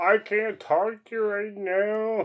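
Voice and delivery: very slow, dragged-out frog puppet voice. Retelling what you said on a spinning ride: Kermit the Frog voice. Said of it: "Sound like fucking Kermit".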